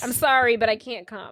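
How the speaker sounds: plain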